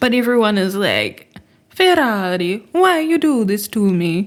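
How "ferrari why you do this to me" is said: slow, exaggerated, bad put-on Italian accent. Imitating what everyone says to Ferrari, in an exaggerated fake Italian accent. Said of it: "no one's doing the accent well".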